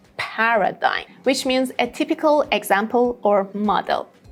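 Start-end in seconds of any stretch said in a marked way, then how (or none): 0.2-1.1 paradigm with the first syllable PAR stressed. Modeling pronunciation for learners, stress on PAR in paradigm. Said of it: "the first syllable has the main stress".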